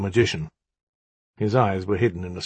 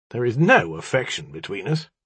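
ordinary delivery

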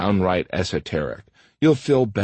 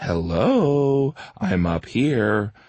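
put-on very slow condescending tone, hello drawn out; 3 semitones higher than usual. Speaker reenacts their usual reply to women staring at their gut, mock-condescending tone. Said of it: "say in a very condescending tone".

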